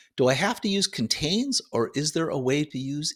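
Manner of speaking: plain reading voice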